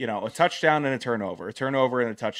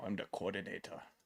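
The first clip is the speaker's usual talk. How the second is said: bad put-on Austrian accent, lower and quieter; 4 semitones lower, 16 dB quieter than usual. Saying a made-up title in an awful Arnold Schwarzenegger impression. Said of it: "so I did an awful Arnold".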